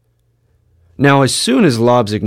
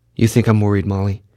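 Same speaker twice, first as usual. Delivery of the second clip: plain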